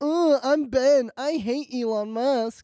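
high, drawn-out mocking voice. Doing a quick impression of a friend for the others: impression of Ben. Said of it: "You wanna hear my impression of Ben".

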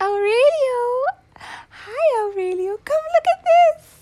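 put-on very high, very loud old woman voice. Imitating a grandmother greeting her grandson: imitating Nana's very high voice. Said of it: "She has a very high voice".

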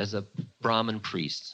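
ordinary talk

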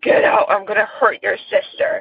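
put-on growling man's voice. Retelling what a voice said after waking up at night, growling man's voice. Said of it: "it was like a growling man's voice".

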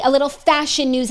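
normal talking voice

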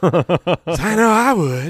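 seductive put-on voice. Asking a silly question to the others: seductive Will Ferrell voice.

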